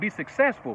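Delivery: ordinary delivery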